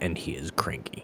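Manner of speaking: secretive whisper.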